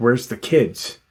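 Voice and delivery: hard, harsh, stern, aggressive voice. Retelling him asking her where the kids are: imitating a stern question. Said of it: "really sternly".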